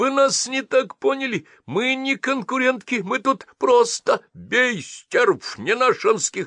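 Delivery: very high, thin, fake little squeak. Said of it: "тонким голоском, как волк из сказки про козлят".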